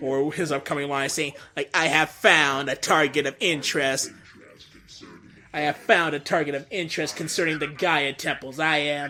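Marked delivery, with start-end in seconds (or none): 1.7-9.1 mechanical robot voice. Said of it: "my Metal Sonic voice line".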